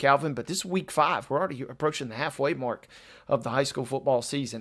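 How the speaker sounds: hushed voice.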